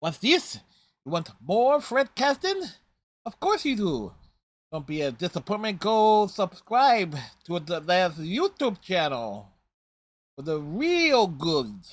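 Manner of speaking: weak, high, swooping cartoon duck voice. Plugging a YouTube channel to the audience, in a weak Daffy Duck impression. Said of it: "my weak ass Daffy Duck impression".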